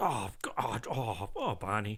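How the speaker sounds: put-on very slow, drawn out, slight Irish accent. Retelling a partner's reaction to a smelly bathroom: imitating girlfriend in slight Irish accent. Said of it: "why is she slightly Irish".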